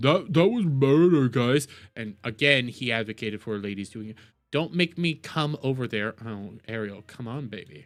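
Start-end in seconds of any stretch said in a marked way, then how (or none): 0.0-1.7 level, unvarying, flat deadpan monotone. Imitating the commentator angry but still monotone. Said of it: "even when he's angry, he's still very monotone".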